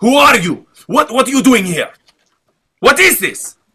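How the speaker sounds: very high, furious shrieking scream. Pinning down a foe in the game and interrogating him: screaming in his face. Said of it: "I'm screaming in his face".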